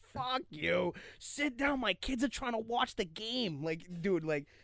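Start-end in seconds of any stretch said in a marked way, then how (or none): 0.1-3.6 put-on straight-up heavy Boston accent, pitched up. Retelling what a man behind them yelled at the game: Boston accent. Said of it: "straight Boston accent".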